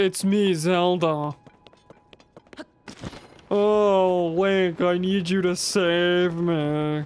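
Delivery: very slow macho voice with drawn-out oh. Answering a question about how a game character might be voiced: deep masculine voice. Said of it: "like a deep masculine voice or what?".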